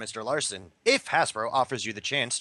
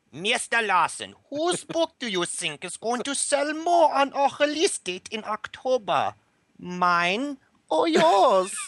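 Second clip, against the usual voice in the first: put-on German accent, very high and loud; 13 semitones higher, 5 dB louder than usual. Host reads out a submitted question in a put-on german accent. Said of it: "I can do a German really good".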